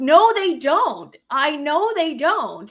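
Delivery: high, slow, firm, emphatic insistent tone. Recounting an argument, the speaker repeats their own reply: retelling own yelling. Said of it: "now you're yelling at me".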